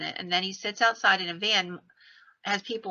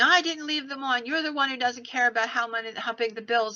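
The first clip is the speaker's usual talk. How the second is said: mock scream, higher; 4 semitones higher than usual. Retelling a couple arguing as they arrive home: imitating someone screaming. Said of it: "And she's screaming".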